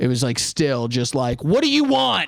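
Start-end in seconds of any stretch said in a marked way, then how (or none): 1.4-2.3 full fury, very high-pitched, furious voice. Retelling how the man at the counter spoke: imitating a furious man. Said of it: "did not drop the level of fury".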